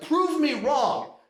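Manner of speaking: put-on high, harsh, abrasive, confrontational shout. Retelling confronting a classmate about her beliefs: retelling an abrasive yell. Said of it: "yelling at her".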